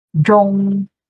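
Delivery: high level tone on Zhong, held straight and flat. Explaining Zhong in Zhongguo, meaning middle: high level tone on Zhong.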